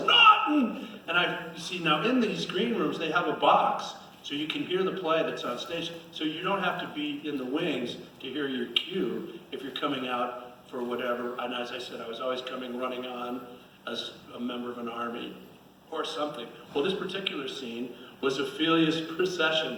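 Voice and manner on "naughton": loud high-pitched shout. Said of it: "this guy yells".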